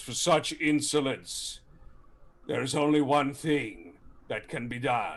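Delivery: dreadful, horrible voice ringing with a cavernous echo. A game master voices a being speaking through flames in a cavern; horrible echoing voice. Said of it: "his horrible voice kind of through the flames, echoing through the cavern".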